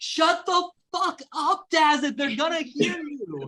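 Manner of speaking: high, shrill screaming. Voicing a character telling another to shut up before they're heard: screaming at someone to be quiet. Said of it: "outwardly out loud is screaming at you to be quiet".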